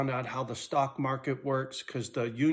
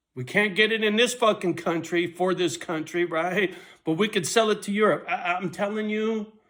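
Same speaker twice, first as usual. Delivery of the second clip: worked-up, loud, high-pitched yelling rant; 6 semitones higher, 5 dB louder than usual. Ranting before stopping to calm down: yelling. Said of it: "Nobody's gonna listen when I'm yelling".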